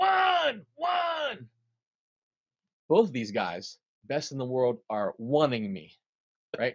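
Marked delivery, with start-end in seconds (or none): 0.0-1.5 very high, loud yelled delivery. Recounting the conga player yelling at him, retelling a yell. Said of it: "Like he's yelling at me".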